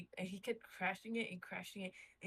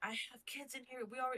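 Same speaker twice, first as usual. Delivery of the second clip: mock pleading, urgent screaming cry; 4 semitones higher than usual. Retelling how the uncle yelled during a break-in attempt: imitating someone screaming. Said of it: "And my uncle screaming".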